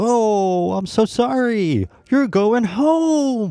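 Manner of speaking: fake over-the-top excitement. Mocking how someone delivers bad news to a person going home: imitating over-the-top excitement. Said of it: "just exciting and over the top... you make it sound excited".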